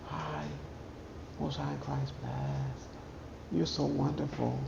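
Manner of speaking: soft, hushed, whispered put-on quiet voice. Mocking a woman whose quiet voice fools people, imitating her quiet voice. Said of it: "Y'all think that quiet voice".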